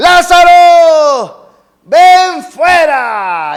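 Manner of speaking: booming, high, very loud shout, stretched long. Retelling a scripture scene, shouting the command: imitating Jesus's loud shout. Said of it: "Imagínese ese gran grito".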